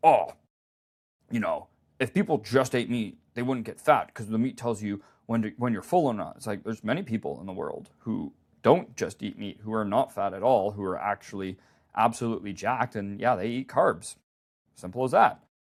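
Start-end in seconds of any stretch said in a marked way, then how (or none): 0.0-6.3 put-on keen, devoted enthusiast voice. Retelling what a brother on a meat-only diet says: imitating his brother. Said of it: "I'm gonna do an impression of him".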